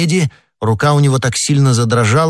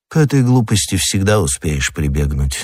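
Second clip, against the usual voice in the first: usual speaking voice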